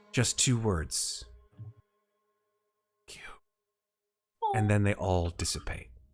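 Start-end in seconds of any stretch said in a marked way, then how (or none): 0.1-4.5 very slow, otherworldly, ghostly spirit voice. Game master voicing one figure who steps toward the players: ghostly voice. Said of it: "in a sort of ghostly voice".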